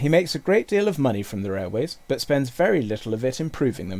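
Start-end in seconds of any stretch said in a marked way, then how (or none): none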